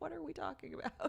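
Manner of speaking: confused, high-pitched voice. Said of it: "We're like".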